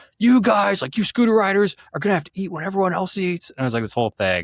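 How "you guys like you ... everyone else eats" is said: worked-up, freaked-out outburst, very high pitch. Retelling how a coworker freaked out about an early lunch: imitating someone freaking out. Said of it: "He, like, freaked out".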